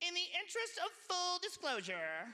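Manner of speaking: sassy female voice with attitude. Telling a story about a woman, quoting her: imitating a sassy woman. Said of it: "like a sassy woman".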